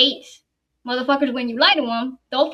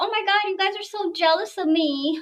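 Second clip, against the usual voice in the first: mocking put-on girl voice, higher and quieter; 6 semitones higher, 5 dB quieter than usual. Retelling what a girl says on her live streams: imitating the girl. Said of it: "she's like".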